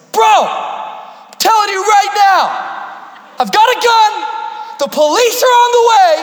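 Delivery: very high, loud threatening shout.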